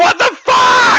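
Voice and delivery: shrill, very high, loud, furious outraged shout. Retelling what a wrestler loudly exclaimed in a match: imitating a loud exclamation. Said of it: "he very loudly exclaims".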